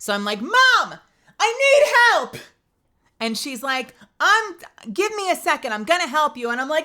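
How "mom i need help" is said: very high, loud, frantic, panicked yell. Retelling panicking and calling to the speaker's mom for help, imitating own loud plea. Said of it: "I'm panicking".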